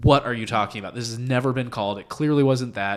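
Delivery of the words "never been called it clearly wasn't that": ordinary talk, nothing marked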